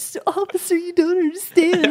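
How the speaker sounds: put-on very high, loud, tearful crying plea. Retelling being pulled over by a cop for speeding: imitating own past crying. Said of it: "crying in the car again".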